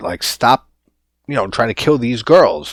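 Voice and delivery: ordinary talk, nothing marked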